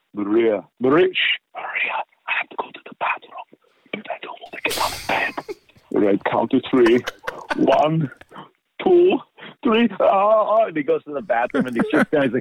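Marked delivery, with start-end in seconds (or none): 0.2-9.9 whispered, hushed character voice throughout. Doing Arnold whispering to Maria in bed about going to the bathroom, as a whispered Arnold impression. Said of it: "we were doing Arnold whispering like".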